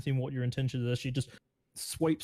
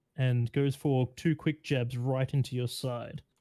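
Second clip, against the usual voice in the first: ordinary talk, nothing marked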